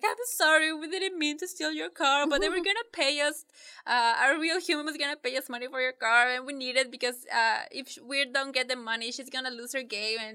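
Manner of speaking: tearful high-pitched speech. Retelling a scene where Ralph apologizes to Shank: imitating Ralph crying. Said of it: "And he's crying".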